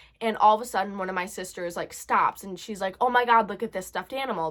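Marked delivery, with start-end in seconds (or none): none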